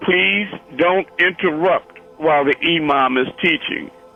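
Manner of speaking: gentlest possible angelic tone. The speaker retells what a man said while looking down at him: very gentle voice. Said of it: "in a very gentlest voice, angelic voice".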